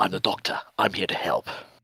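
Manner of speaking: loose, rough, not-very-good Scottish twang. Speaker recalls reading a chapter as the Doctor, Doctor impression, trying Scottish twang. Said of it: "Trying that sort of a Scottish twang".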